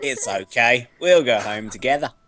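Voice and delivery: bad, failed put-on Australian accent. In a role-play scene, a player speaks in character with an attempted Australian accent. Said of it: "That's not an Australian accent".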